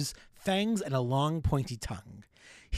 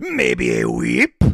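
very deep, very low, very loud, booming demon voice; 10 dB louder than usual. Answering the other speaker's question about the accent, in a Krampus voice. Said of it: "that Krampus voice".

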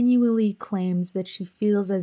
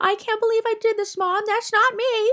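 put-on very high obnoxious childish voice. Acting out a teenage girl talking to her mom, high, obnoxious voice. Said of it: "with a high, obnoxious voice".

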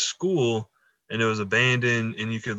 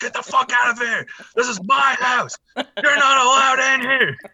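shrill, loud, very high screaming fit; 13 semitones higher, 5 dB louder than usual. Retelling screaming at guys walking by: retelling a scream. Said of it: "I just started screaming at 'em".

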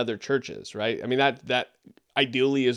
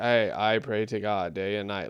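bare, dry reading with no word emphasized; 3 semitones lower than usual. Discussing how to read scripture aloud, showing a dry, flat reading. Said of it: "Not just dry reading it".

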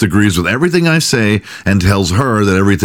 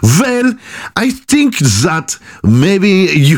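bad put-on German accent, very high; 10 semitones higher than usual. Playing the doctor replying to a complaint about a cheating partner; Freud accent. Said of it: "i have to put on my Freud accent".

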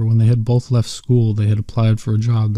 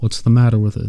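ordinary delivery

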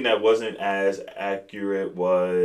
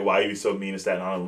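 normal talking voice

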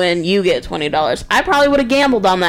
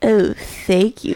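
mock-seductive voice, slower. Retelling a woman taking the podcast handout, in a mock-seductive voice. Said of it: "She had a seductive voice".

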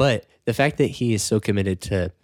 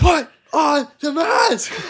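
mock shrill, high, dragged-out yelling rant; 6 dB louder than usual. Retelling a leaked clip of someone going crazy: imitating a screaming rant. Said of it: "him screaming about the guy".

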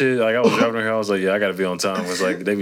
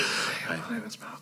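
soft, breathy put-on ASMR-style whisper; 4 semitones lower, 13 dB quieter than usual. Mocking a friend as an ASMR video host: mock ASMR whisper as Malcolm. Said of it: "They whisper".

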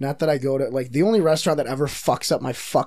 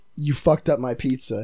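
stern, mock-polite, condescending tone; 3 semitones lower than usual. Retelling a phone complaint about a burnt pizza: imitating a stern, condescending scolding. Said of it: "a very stern, polite, very condescending".

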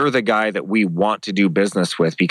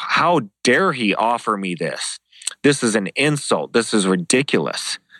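outraged, furious, livid, indignant tirade; 2 semitones higher than usual. Retelling reading an insulting contract to a lawyer: retelling own livid rant. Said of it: "I'm so pissed off".

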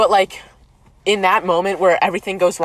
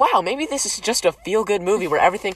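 ordinary delivery

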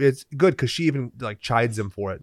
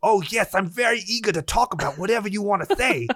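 earnest, put-on German accent, pitched up; 8 semitones higher than usual. On a podcast, act out a guy earnestly eager to talk, in a hammed-up imitation of his accent. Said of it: "the accent I'm doing is, like, exactly him".

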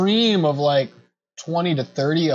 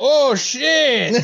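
put-on very high pirate voice with Mexican accent; 11 semitones higher, 4 dB louder than usual. Voicing a pirate heard under the wharf, Mexican-accented pirate voice. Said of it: "we have Mexican pirates".

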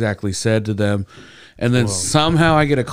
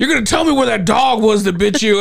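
mock, very high-pitched, aggressive and demanding delivery; 10 semitones higher than usual. Retelling how a hospital orderly questioned about the dog: imitating an aggressive orderly. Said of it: "more and more aggressive nurses".

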